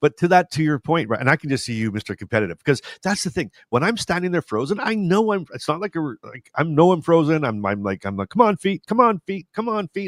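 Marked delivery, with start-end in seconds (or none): 8.3-10.1 play-acted high, urging shouted delivery. Retelling standing frozen and urging own feet on: imitating own yelling. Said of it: "I'm yelling at them".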